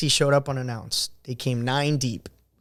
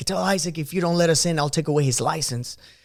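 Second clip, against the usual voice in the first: put-on restrained, held-back, half-shouted mild yell; 3 semitones higher than usual. Retelling what one of the visiting guys screamed: imitating someone screaming. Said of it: "one of the guys screams".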